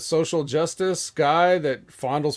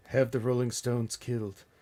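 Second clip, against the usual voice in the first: put-on villainous old voice, lower and quieter; 4 semitones lower, 7 dB quieter than usual. Quoting a cartoon villain after comparing a wrestler to him: Mister Burns voice. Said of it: "not as good as Mister Burns".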